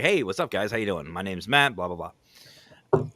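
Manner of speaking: easygoing, chummy, laid-back and casual voice. Retelling a greeting to spirits on a battleship: retelling own laid-back greeting. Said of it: "I was more laid back".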